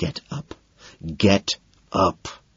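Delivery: very slow, urgent, desperate pleading whisper. Narrator to a wailing companion as a security guard approaches: desperate whisper. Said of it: "I whisper desperately".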